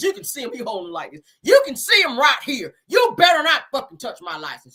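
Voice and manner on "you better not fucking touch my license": very angry, mad-as-hell delivery. Speaker retelling a man's reaction to police asking for his license, imitating an angry man. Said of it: "he's mad as hell".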